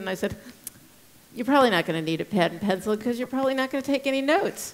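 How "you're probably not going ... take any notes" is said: thick, heavy sarcasm throughout. Speaker retelling what they told a man in the screening room, retelling an incredibly sarcastic remark. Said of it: "I'm being incredibly sarcastic".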